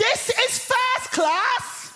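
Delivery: shrieked at full volume, very high pitched. Recounting a woman in a first class carriage spotting them, retelling a loud shout. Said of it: "at the top of her voice, she shouts".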